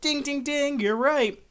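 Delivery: tiny, cute, very high little voice. Retelling a story, a woman's voice answers the main character: cute little voice. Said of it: "you hear this cute little voice go".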